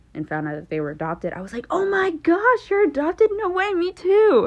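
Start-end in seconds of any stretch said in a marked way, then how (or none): 1.7-4.5 very high, drawn-out, thrilled, gushing excitement. Recalling meeting someone who was also adopted, acting out past excitement. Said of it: "I was just so excited".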